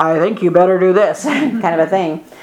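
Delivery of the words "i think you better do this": loud, resonant boom. Showing how cartoons portray God speaking: booming cartoon God voice. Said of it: "the loud, booming voice".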